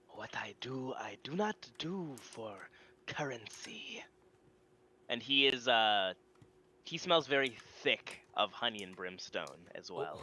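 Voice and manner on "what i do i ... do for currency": big armored giant warrior voice. A storyteller voices the large armored one replying to the party's offer: voicing the large armored one. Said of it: "the large one, uh, sort of in armor, not the old man, says".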